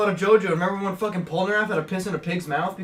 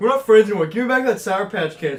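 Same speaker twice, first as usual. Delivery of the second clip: ordinary delivery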